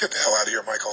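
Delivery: very low, dismissive, can't-be-bothered voice. Demonstrating to an audience how to greet someone, dismissive, like a waste of time. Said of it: "as if talking to this person was a complete waste of".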